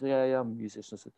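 put-on Mancunian accent. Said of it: "a kind of Mancunian accent".

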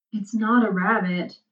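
usual speaking voice

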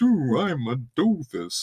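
slow, drawn-out cartoon voice, swooping wide. Showing how the co-host imitates men: Homer Simpson voice. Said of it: "you immediately go to, like".

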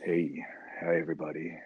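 very soft, low, hushed sultry murmur. Recalling botched first podcast recordings, the speaker is imitating a low sexy voice. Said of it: "It just got lower and".

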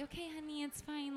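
soft, hushed, placating, soothing reassuring voice.

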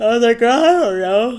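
speech spoken through a yawn. Speaker chatting casually, talking through a yawn. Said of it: "Sorry to talk through a yawn".

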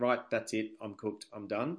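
usual speaking voice

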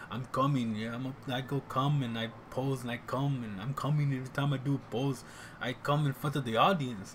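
deliberately bad, clumsy put-on strongman voice. Retelling a bodybuilder's stage talk from Pumping Iron, Arnold impression. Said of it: "that's a horrible Arnold impersonation".

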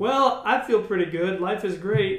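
plain

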